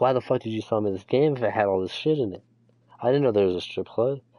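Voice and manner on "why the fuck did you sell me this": plain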